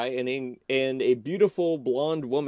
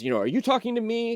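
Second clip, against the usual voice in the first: very high, fast, affronted and indignant delivery; 9 semitones higher than usual. Retelling a scene, acting out the young man's line as a mock-indignant retort. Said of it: "gets very indignant and says".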